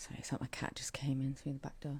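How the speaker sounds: soft whisper.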